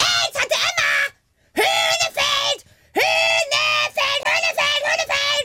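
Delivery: shouting.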